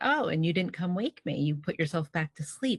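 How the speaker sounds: ordinary talk, nothing marked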